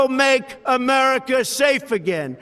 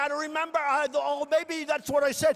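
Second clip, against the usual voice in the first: scornful, derisive reporter voice; 3 semitones higher, 8 dB quieter than usual. Imitating a reporter who can't recall what he said: mocking imitation of a reporter. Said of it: "He's going like".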